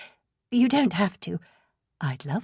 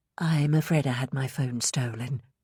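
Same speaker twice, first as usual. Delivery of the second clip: low, soft, dulcet tones; 3 semitones lower, 4 dB quieter than usual. Reading a story aloud, a woman explains her phone was stolen: low, dulcet tones. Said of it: "in her low, dulcet tones".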